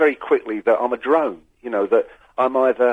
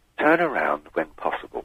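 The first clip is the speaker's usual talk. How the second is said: smug, self-satisfied sat-nav voice, low and soft; 8 semitones lower, 5 dB quieter than usual. Describing missing a turn in traffic, the speaker imitates a mock-smug sat-nav voice. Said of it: "a smug voice pops up and says".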